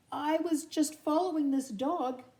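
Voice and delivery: shaky, trembling, high, frightened voice. A narrator reads a frightened kitten's line to a gang of dogs, shaky voice. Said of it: "He said in a shaky voice".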